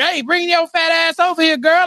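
mild, half-hollered yell. Retelling how Tim Stark yelled at a reporter: imitating Tim Stark yelling. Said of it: "yelling at the reporter".

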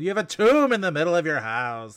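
dramatic, forceful, high swooping yell full of gravitas. Quoting a favorite trailer line: imitating Susan Sarandon yelling. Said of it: "just Susan Sarandon going".

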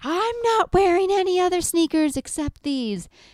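put-on high screaming, wailing, sobbing child's crying tantrum. A parent retells their child refusing other sneakers for field day: imitating a screaming, crying child. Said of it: "she's screaming and she's crying".

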